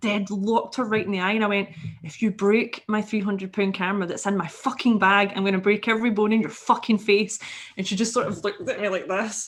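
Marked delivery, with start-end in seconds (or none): 2.0-7.4 strongest, thick Scottish brogue, laid on heavily. Retelling what they said to a woman pushing against their bag, strong Scottish accent. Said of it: "in the strongest Scottish accent I could muster".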